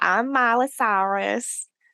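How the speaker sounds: over-the-top, showy, hyped-up delivery. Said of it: "When has [name] ever spoken like that?".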